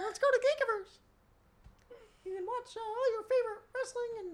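very high, squeaky cartoon voice. Asked to talk in that voice, the speaker plugs Geekiverse in a Mickey Mouse voice. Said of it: "Are you Pinocchio or Mickey Mouse?".

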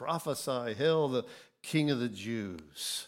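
usual speaking voice

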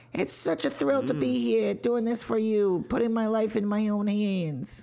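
put-on very high-pitched New York–New Jersey accent. Imitating a stage performer thanking his audience, in a high-pitched New Jersey voice. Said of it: "a very high pitched New York or New Jersey voice".

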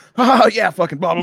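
put-on very high-pitched drunken shrieking scream. Describing what his housemate hears at home, he reenacts his own mock drunken screaming. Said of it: "like all like screaming".

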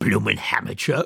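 rough, contemptuous hiss. A large woman shoving past Edna toward the stage: hissed. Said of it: "she hissed as she went past".

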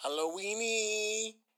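Mexican-sounding pronunciation. Saying the word Halloween as Halloweeny: Mexican-sounding pronunciation. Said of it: "Why do you say that so Mexican?".

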